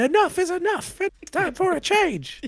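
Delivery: shrill wrestler-style scream, pitched way up, very high, loud. Retelling a wrestler's voiceover in a wrestling game: imitating Owen Hart screaming. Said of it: "Owen Hart screaming".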